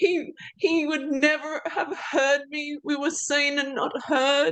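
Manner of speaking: crying while speaking. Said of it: "Here I am crying".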